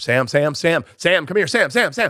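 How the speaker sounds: high, put-on, repeated calling yell. Retelling yelling into the other green room for sam, retelling a yell for sam. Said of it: "I just start yelling into the other green room".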